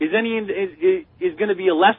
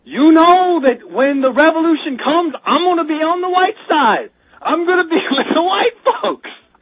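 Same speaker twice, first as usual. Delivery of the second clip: raised, high-pitched preaching delivery, as from a pulpit; 9 semitones higher, 5 dB louder than usual. Quoting a man's words from clips, in his preacher voice. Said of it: "He was talking in his preacher voice".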